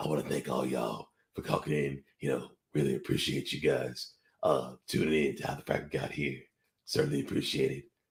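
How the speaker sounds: very low, hushed, fake deep bass voice. Closing a podcast, the host thanks listeners for calling in, in a put-on deep voice. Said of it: "It inspires me to go deep voice again".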